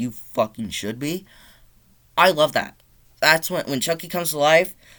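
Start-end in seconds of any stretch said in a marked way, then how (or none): none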